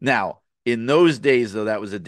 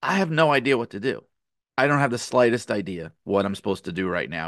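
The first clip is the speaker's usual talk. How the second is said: mock bashful, sheepish, embarrassed, at-a-loss tone. Retelling what a guy said to Kurt, imitating his sheepish answer. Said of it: "the guy just sheepishly goes".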